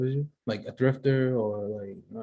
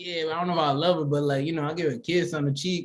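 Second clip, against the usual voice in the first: mock, mean-sounding delivery; 4 semitones higher than usual. Retelling how the other speaker sounded, called mean: imitating a friend sounding mean. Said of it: "but the way you say, he's like".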